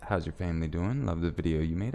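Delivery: ordinary delivery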